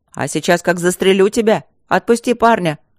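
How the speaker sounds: loud, bold, brave shout. Narrator reads a man in the square confronting a dragon holding a captain, with a brave shout. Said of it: "храбро крикнул какой-то мужчина".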